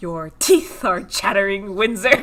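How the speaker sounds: really irritated, fed-up, annoyed tone. Retelling how someone spoke to a shivering companion: retelling a genuinely annoyed line. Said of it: "in a very genuinely annoyed voice is like".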